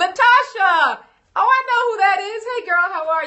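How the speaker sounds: voice jumps way up, high-pitched. Greeting Latasha, who just arrived, in a high-pitched voice. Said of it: "See how high, high pitched my voice?".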